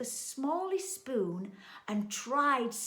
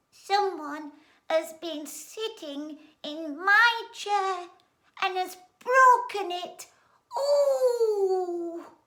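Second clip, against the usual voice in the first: put-on small, very loud, squeaky baby voice, "ooh" stretched; 8 semitones higher, 9 dB louder than usual. Narrator reading a story, Little Bear speaks after his parents, Little Bear's small squeaky baby voice. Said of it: "in a small, squeaky baby voice".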